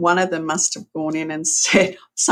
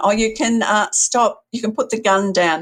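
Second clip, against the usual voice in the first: mock high, calmed-down mother voice, calling out; 5 semitones higher, 3 dB louder than usual. Retelling how a mother called out to her son, imitating someone calling out. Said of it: "calmed down and then called out to her son".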